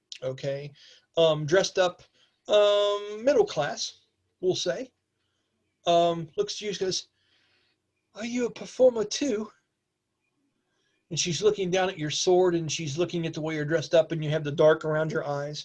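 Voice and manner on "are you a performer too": put-on high, really polite little-girl voice. Voicing a little girl who asks the player's character a question: really polite little girl voice. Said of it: "says to you in this really polite voice".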